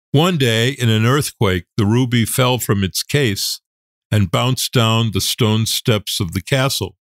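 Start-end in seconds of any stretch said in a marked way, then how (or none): none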